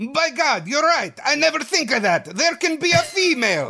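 put-on high-pitched Italian-accented magical frog character voice. Read out Dino's answer to the writer, as Dino De Laurentiis, magical Italian frog. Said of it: "He talks like a magical Italian frog".

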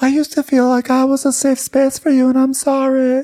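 very high falsetto voice. Retell what Lisa said before Meredith answered her, imitating Lisa's falsetto. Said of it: "She has like a falsetto".

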